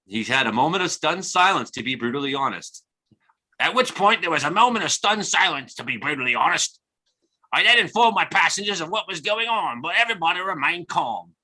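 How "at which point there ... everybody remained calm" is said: put-on invented, made-up Australian accent voice. Quoting a man's account of a snake under his seat, use a mock australian hobbit accent. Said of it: "so now he's an Australian hobbit?".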